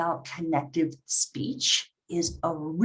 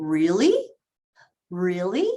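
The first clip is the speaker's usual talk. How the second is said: the word really climbing in a surprised rising tune. Teaching intonation, the speaker demonstrates a surprised question: surprised rising intonation. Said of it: "if you're surprised".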